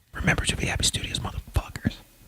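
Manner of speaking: soft, whispered delivery. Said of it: "I think I'm gonna whisper".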